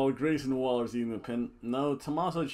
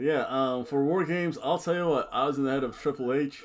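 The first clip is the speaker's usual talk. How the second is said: usual speaking voice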